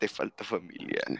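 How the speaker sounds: breathy, all-breath whisper with tough tone. Joking that the other speaker needs family: Toretto impression. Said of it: "Toreto be like".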